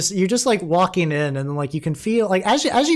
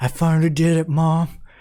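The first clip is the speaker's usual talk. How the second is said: faint, hushed, barely audible whisper. A character asleep in the car murmurs to Mom, in a faint whisper. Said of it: "just faint whispers".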